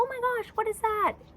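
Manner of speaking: cheerful, excited, very high and loud. Showing the happy tone of voice to use with her: happy tone. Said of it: "you want to use happy tones of voice with her. So it's like".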